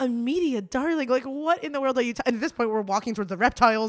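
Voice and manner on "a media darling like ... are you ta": mock incredulous laughing retort, pitched up. Retelling own reaction to an insult: retelling own laughing disbelief. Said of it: "fell to my knees laughing".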